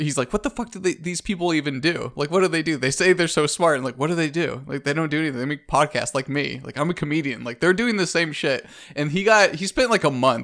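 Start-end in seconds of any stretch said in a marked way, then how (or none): none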